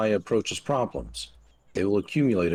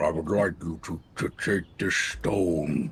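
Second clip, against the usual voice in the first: rough, low, slow, gruff werewolf voice; 4 semitones lower than usual. Reading a forest character's line after being asked for a gruffer voice: gruffer voice. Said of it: "I'll give him a gruffer voice".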